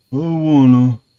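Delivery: mock lazy bored voice. Mocking how the actor played Ben Grimm: low-energy Ben Grimm impression. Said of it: "say it's clobbering time".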